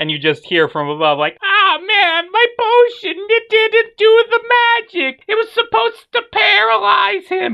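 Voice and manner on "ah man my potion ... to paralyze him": put-on very high old witch voice. Game master voices a witch on a broomstick above the players' car, in an old hag voice. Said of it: "And you see this old hag on a broomstick just flying above your car".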